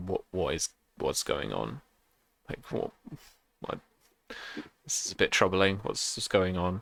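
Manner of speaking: low, hushed, whispered aside. Voicing a distracted magistrate asking a courtier what's happening: whispering. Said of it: "you can see him whisper".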